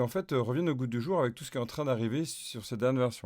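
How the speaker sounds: plain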